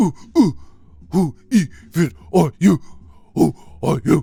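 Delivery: booming, very loud, dim-witted caveman voice. Mocking a man who talks like a caveman, caveman voice. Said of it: "Motherfucker talking like a caveman".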